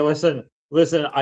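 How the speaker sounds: plain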